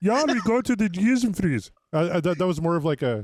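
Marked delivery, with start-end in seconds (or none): 0.0-1.7 high, put-on Swedish accent. Joking about a made-up club name in a Swedish Chef accent. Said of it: "I kinda went Swedish chef there".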